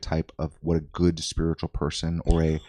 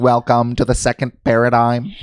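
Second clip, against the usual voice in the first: loud, high-pitched, flat, level robotic voice; 6 semitones higher, 8 dB louder than usual. Joking about a channel with a Stephen Hawking voice: Stephen Hawking voice. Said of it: "Like a robot?".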